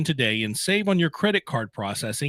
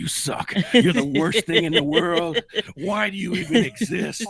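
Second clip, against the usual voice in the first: nasty, mean put-on conscience voice, drawn out; 3 semitones higher than usual. Voicing the other, bad conscience after the good one: put-on voice of a mean conscience. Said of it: "The other one's going".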